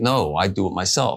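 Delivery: ordinary delivery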